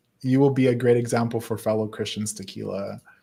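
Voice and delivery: ordinary talk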